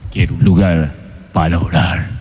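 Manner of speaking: very deep, low, sepulchral voice from beyond the grave. Recalling the visiting preachers at his childhood church, imitating a voice from beyond the grave. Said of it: "con voz de ultratumba".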